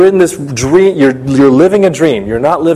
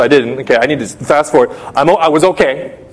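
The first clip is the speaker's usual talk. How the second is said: normal talking voice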